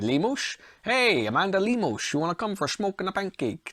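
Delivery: bad, fake, put-on Dutch accent. Joking about a fighter's name while previewing a main event: put-on dutch accent. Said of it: "saying that like a Dutch person".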